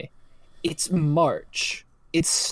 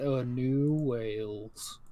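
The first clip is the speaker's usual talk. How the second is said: very quiet, flat, gloomy mumble, drawing out "Wales"; 4 semitones lower, 10 dB quieter than usual. Repeating the words like Eeyore would, in a flat Eeyore intonation. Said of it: "I was saying it like the intonation of like Eeyore".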